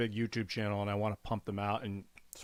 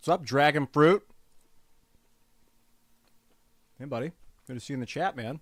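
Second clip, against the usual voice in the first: talking with mouth full, higher and louder; 4 semitones higher, 8 dB louder than usual. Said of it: "I'm chewing while it loads".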